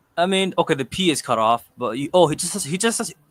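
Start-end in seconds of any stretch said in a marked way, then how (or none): 2.2-3.2 high, stuttering, stumbling over repeated words. Explaining how he should resize a banner for YouTube, stuttering. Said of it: "I'm stuttering".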